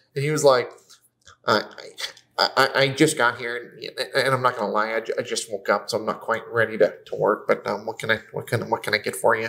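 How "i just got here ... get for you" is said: mock flat, emotionless waiter monotone, lower, slower. Speaker mimicking exactly how a server talks: imitating a flat, emotionless waiter. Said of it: "It's literally what he talks like".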